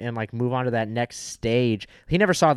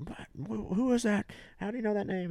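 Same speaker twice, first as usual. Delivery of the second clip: high-pitched screaming voice; 9 semitones higher, 9 dB quieter than usual. Recalling a Batman scene about a name, imitating Batman screaming. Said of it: "fucking Batman when he's screaming".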